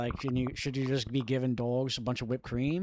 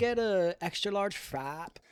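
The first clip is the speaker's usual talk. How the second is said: put-on effeminate man voice, higher; 7 semitones higher than usual. Playing a customer ordering a frap at Starbucks, in a mock effeminate man voice. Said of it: "An extremely effeminate man is coming in".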